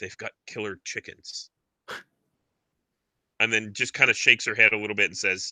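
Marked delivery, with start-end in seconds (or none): 0.0-1.5 muttered under the breath, much quieter. Retelling what she said after hearing the report, muttering under her breath. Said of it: "she kind of under her breath says".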